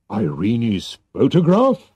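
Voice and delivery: surprised, taken-aback voice. A king hears what the man he wants to thank asks for, surprised. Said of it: "The king looked at him in surprise".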